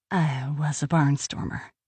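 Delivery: gently spoken, softened, soft-voiced tone. A woman answers a question about the flying she did, in a soft voice. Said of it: "she said in a soft voice".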